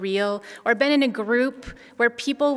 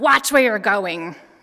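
put-on really mean growling voice, raised; 5 dB louder than usual. Parent retelling how another shopper snapped at her small son, imitating a mean growl. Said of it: "she growled, like a really mean voice".

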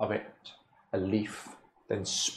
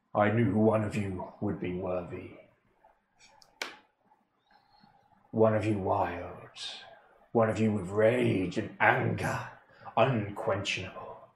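deep, strong, powerful ancient spirit voice. A spirit trapped for millennia speaks in the listeners' heads, deep, powerful voice. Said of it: "You hear a deep, powerful, strong voice in your head".

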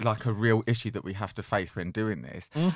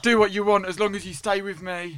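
very high, clingy, needy pleading voice; 9 semitones higher, 4 dB louder than usual. Discussing a couple, the speaker acts out the boyfriend: impression of the boyfriend. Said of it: "That's a good impression".

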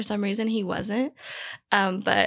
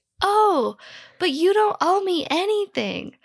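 put-on scream, higher and louder; 10 semitones higher, 5 dB louder than usual. Retelling losing temper at a roommate in bed: imitating own screaming. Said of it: "I just start screaming at him".

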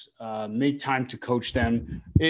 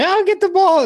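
shrill, very high, loud scream; 11 dB louder than usual. Retelling a mom screaming from the stands at a soccer game: retelling a scream. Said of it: "she was screaming".

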